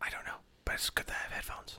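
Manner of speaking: quick quiet whisper. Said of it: "now that we're done whispering".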